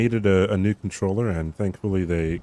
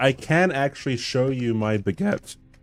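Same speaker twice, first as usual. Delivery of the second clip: voice cracking, much slower; 5 semitones higher than usual. Streamer answering a chat request, voice cracking. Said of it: "that was a voice crack and a half".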